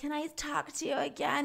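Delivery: very quiet, hushed, weird wacky little voice. Speaker mocks a woman who showed up on a date, imitating her whack voice. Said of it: "In her whack ass voice".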